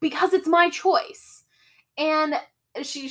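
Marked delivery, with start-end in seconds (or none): 0.0-1.4 put-on scream, higher pitch. Retelling a character's meltdown in the desert: imitating someone screaming. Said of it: "she screams and she's like".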